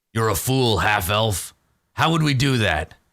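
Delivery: orc character voice. Voicing an orc who squints down at a half-elf: voicing an orc. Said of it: "And he turns slowly".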